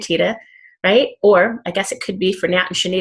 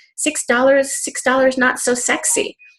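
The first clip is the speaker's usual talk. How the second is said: put-on very adorable, slow Italian accent, pitched up; 6 semitones higher than usual. Telling people who missed the convention what the comp plan's designer said, in Alessandro Senatore's adorable Italian accent. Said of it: "in his very adorable Italian accent".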